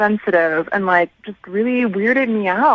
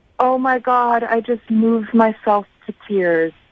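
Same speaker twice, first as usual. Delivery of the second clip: slow, mock crying through the words. Retelling a first date, imitating the date speaking through tears: imitating someone crying. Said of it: "in the middle of his tears, he goes".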